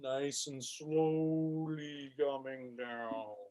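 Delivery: very slow whale voice, every word dragged out. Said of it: "I sound like I'm talking whale".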